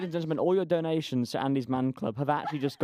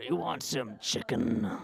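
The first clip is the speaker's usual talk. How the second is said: slow, drawn-out delivery; 3 semitones lower than usual. Doing an impression after being asked to do Colonel Sanders: Colonel Sanders impression. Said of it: "Do a Colonel Sanders impression".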